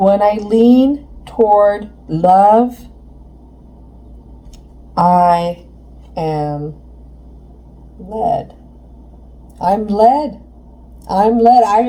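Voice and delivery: very slow, voice catching with emotion. Sharing the message from the angels, the speaker gets choked up. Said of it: "I'm getting choked up".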